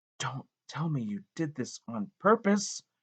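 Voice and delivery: shocked whisper. Reading a story aloud, a teacher learning a boy hurt himself: shocked whisper. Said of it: "she whispers in a shocked voice".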